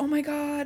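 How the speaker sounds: wild, giddy, crazy excited, high exclamation. Retelling a book scene where a character meets others: imitating crazy excited character. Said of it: "he's, like, crazy excited".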